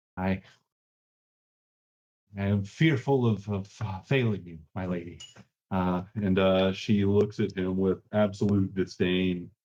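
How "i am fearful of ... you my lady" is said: plaintive, whining voice. A man speaks to his lady, in a whining voice. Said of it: "in this like kind of whining voice".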